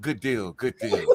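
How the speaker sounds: spoken out loudly. Retelling how Port reacted in the interview: imitating Port. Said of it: "You can hear it in Port's voice".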